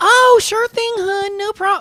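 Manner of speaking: put-on high-pitched Texas accent, service-agent voice. Imagining a customer service agent given an accent, Ashley's Fort Worth accent. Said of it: "give them accents".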